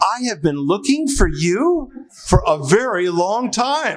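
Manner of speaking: high, delighted, playing-along tone.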